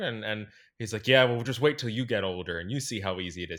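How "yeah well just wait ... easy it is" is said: bristling, touchy, defensive comeback. Retelling a man outside the church answering a question, mock-defensive retort. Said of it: "He got like real defensive".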